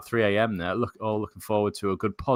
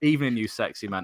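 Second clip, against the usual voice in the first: ordinary talk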